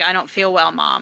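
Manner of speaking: normal talking voice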